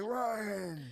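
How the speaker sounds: loud heavy-smoker voice, a name drawn out. Retelling a call from a listing agent, imitating a heavy smoker's voice. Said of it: "she sounded like she has smoked, like, a million cigarettes".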